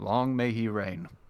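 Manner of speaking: very heavily sarcastic, dripping with sarcasm. A storyteller voices a character mentioning their faraway king: very sarcastic. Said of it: "he says very sarcastically".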